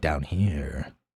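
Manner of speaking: dropped low voice. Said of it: "how do you drop your voice like that".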